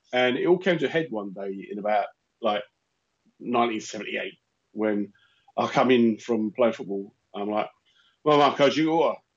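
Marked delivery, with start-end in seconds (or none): 8.2-9.1 put-on London Cockney accent. Speaker retells coming in from playing football in 1978: Cockney accent. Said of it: "this kind of Cockney accent".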